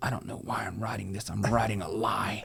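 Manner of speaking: put-on mumbling and muttering under the breath. Retelling what a child said while writing lines: imitating muttering under breath. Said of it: "he's talking under his breath".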